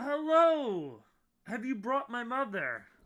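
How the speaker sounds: overjoyed, loud, high, with drawn-out hello. Voicing a character in a room of robots greeting the visitors: delighted. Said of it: "he is delight-, delighted, and he's like".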